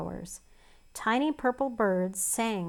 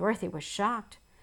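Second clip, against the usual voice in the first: ordinary delivery, nothing marked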